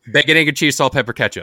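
run together like one word, fast, one breath. Saying a breakfast sandwich order as one word, all in one breath. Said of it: "no breath in between".

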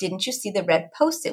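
put-on whisper. Retelling what was said to a child who walked in: imitating own whisper. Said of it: "that's why I whispered just now".

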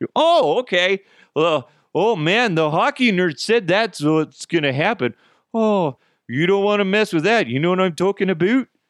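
bad put-on Canadian accent. Mocking what hockey nerds say about the rule: crappy Canadian accent. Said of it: "kind of a crappy Canadian accent".

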